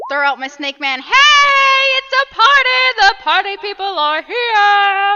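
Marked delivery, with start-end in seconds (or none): 1.0-5.2 very high, very slow, drawn-out screaming holler. Kicking a door open and throwing out a snake: screaming in character. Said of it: "you start screaming".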